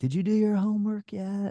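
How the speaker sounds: loud yelling.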